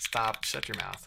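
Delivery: aggressive, rough, snapped-out, curt tone. Snapping at another speaker who keeps repeating code aloud: aggressive. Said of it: "I'm so aggressive right now".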